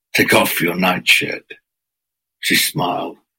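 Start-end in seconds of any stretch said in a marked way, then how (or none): 0.2-1.6 growled, growling tone. Narrator reads the serpent's line to her, secure in his den; growled. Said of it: "the serpent growled".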